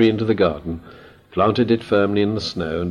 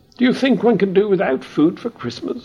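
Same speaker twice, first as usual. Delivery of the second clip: impatient, very high-pitched tone; 12 semitones higher than usual. Narrating a Moomin story, the Mimble answers impatiently. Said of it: "She said impatiently".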